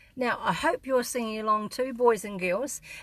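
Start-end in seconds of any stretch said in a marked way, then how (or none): none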